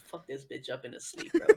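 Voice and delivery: hushed, secretive whisper. Retelling what a woman just whispered to the dog, retelling a whisper to a dog. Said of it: "she just whispered to the dog".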